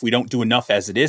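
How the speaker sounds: ordinary talk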